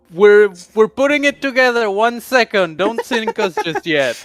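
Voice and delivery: very loud, high hollering shout. A player's character calls out during an encounter at sea, shouting out. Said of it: "shout out in, in Draconic".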